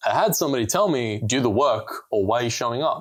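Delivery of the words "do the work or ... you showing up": plain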